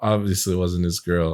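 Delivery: plain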